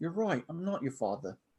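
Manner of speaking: bad high British accent. Quoting a movie line while attempting a British accent. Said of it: "I can't do a British accent".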